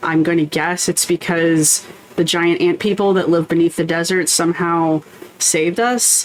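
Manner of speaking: ordinary talk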